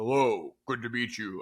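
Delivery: large commanding cartoon voice. Imagining how a muscular athlete might sound: Lilo and Stitch manta-ray guy voice. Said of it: "You think he would sound like the guy".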